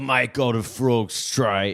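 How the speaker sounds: put-on loud, high Cockney accent. Doing an Elon impression as East London Cockney: Elon Musk impression, Cockney accent. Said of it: "my Elon impression is just gonna be East London Cockney accent".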